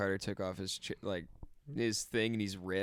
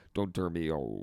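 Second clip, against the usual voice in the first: robot powering down voice, lower; 5 semitones lower than usual. Showing a talking computer as it shuts off: computer shutting off voice. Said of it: "computer shutting off".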